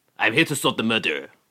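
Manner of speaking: put-on French accent. Joking about an old presidential candidate, speaking in a french investigator voice. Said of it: "He sounds like a French investigator".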